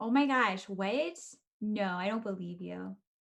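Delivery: sarcastic, mock surprise and disbelief. Reacting to being told who asked the question: sarcastic fake surprise. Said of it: "are you being sarcastic".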